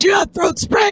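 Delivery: very high, ruined-throat, wrecked smoker's voice. Retelling how a man came into medical with a wrecked throat, imitate Brody sounding like a smoker. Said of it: "he just sounds like a smoker".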